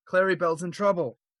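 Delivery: high-pitched alarmed yell. Playing a character in a game scene, yelling a warning. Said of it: "I'm gonna yell".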